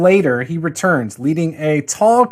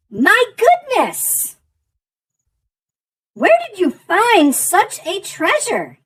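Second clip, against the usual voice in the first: put-on croaking hag voice. A game master voices the Hag addressing the players' group, croaking hag voice. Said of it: "she croaks".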